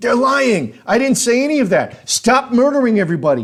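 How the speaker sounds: acted, raw, high-pitched screamed outburst. Retelling breaking away from a police officer: retelling own screaming. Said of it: "and I'm screaming".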